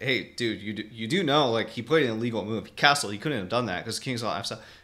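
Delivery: ordinary delivery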